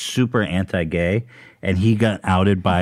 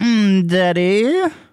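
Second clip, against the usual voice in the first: mocking impression, higher pitched; 13 semitones higher, 4 dB louder than usual. Doing an impression of the other speaker on request: imitating the other speaker. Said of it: "I can do one of you".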